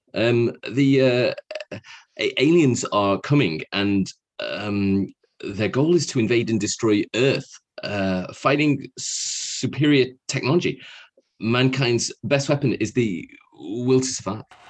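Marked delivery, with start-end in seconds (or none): 2.5-14.5 hesitant delivery leaning heavily on the inflections. Doing a Jeff Goldblum impression for the others: Jeff Goldblum impression. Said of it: "can I do Jeff?".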